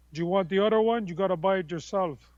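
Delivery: put-on heavy, thick Colombian accent. Quoting the speaker's dad refusing a second turntable, in his thick colombian accent. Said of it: "my dad in his thick Colombian accent".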